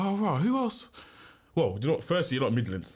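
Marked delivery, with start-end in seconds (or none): 0.0-0.9 high, put-on musing voice, wondering aloud. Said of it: "So I was like".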